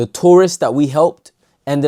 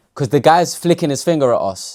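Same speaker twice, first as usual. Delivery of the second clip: normal talking voice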